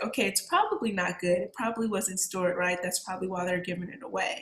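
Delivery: ordinary talk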